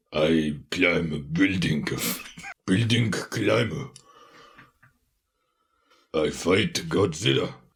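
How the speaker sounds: very deep, dim-witted gorilla-like voice. Speaker, asked for an impression, doing a King Kong impression. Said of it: "let's get a King Kong impression".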